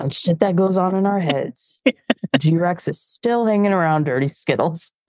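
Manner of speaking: put-on movie-trailer announcer narration voice. Speaker riffs during a conversation, in movie man voice. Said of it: "That's my movie man voice".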